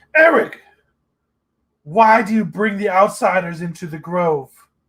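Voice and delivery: haughty, imperious, commanding tone from on high. Voicing a figure who calls out to the intruding party: imperious voice. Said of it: "an imperious voice calls out".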